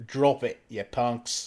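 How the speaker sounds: slow put-on Australian accent. Repeating a movie line when asked: Australian accent. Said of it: "You're gonna have to say in an Australian accent".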